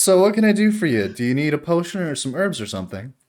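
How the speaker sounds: talking through little giggles. Voicing a character answering a visitor's flirt: giggling while speaking. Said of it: "she giggles at that and goes".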